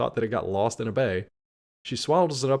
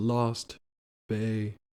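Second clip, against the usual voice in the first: slow delivery with each word set far apart. Retelling how she repeated the penguin's words, spacing the words out. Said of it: "she even like spaces it out more".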